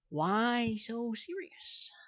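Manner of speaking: hammy, cheesy, poorly done comic-book villain voice. Quoting a line while gaming and trying to make others laugh: Joker voice. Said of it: "Don't say I'm bad at the Joker!".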